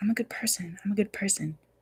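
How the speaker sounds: muttering under breath. Retelling what a friend often says: imitating someone muttering under breath. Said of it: "under his breath".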